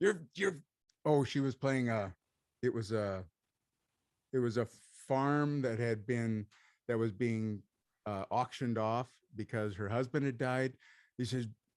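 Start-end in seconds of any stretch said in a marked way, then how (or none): 0.0-0.6 loud, pitched-up yell. Retelling what a man yelled at an actress, retelling a man yelling. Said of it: "yelling at her".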